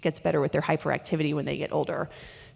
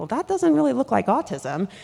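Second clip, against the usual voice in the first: high, loud puzzled, doubtful thinking aloud. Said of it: "And I'm like".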